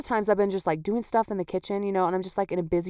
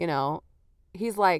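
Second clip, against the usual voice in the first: ordinary talk, nothing marked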